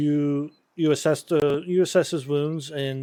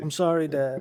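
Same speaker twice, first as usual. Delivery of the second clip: mumbling, muttering. Voicing a barely conscious, stabilized character: mumbling. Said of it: "He's mumbling".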